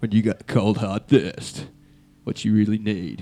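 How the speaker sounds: deep Australian TV commercial announcer voice. Explaining the accent to the others, doing the VB commercial guy voice. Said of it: "imitating the guy from the VB commercial".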